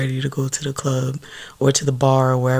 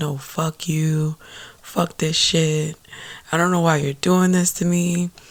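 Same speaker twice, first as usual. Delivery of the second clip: mock bawling, crying out through sobs; 3 semitones higher than usual. Speaker retells her words to the woman holding her hand, imitating bawling. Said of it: "and I'm like bawling".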